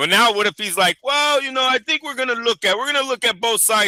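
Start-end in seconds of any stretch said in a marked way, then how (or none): 1.0-3.9 put-on Latin accent, pitched up. Acting out a boxing money man weighing a deal: imitating Turki with Latin accent. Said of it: "my Turkey has a Latin accent".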